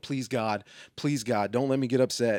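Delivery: acted-out prayer-like voice. Retelling how he paced back and forth in the aisles, retelling his pacing prayer. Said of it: "walking back and forth in the aisles going".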